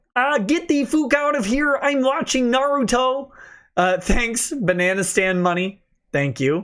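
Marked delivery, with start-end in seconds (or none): 0.4-3.3 high-pitched frog puppet voice. Reading out a requested line on the show, in Kermit Yeller voice. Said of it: "In Kermit Yeller voice".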